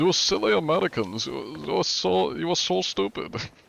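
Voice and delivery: clumsy put-on German accent. Recalling playing a character in a game: bad german accent. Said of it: "in like a German accent".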